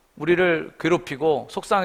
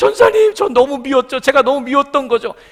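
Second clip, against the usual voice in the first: put-on very loud, high, sobbing, tearful pleading tone; 11 semitones higher, 10 dB louder than usual. Retelling a young woman's tearful testimony to her evangelist: imitating someone crying while talking. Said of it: "막 울면서 얘기하는 거예요".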